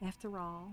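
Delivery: put-on slipping into British accent. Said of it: "You're so used to my British accent".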